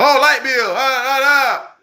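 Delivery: put-on very high, very slow, drawn-out hollering. Retelling how a jail cellmate reacted, imitating someone screaming. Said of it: "You steady screaming and hollering".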